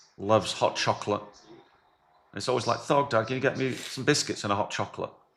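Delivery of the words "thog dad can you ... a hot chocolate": normal talking voice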